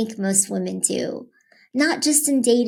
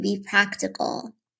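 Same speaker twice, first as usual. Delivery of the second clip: ordinary delivery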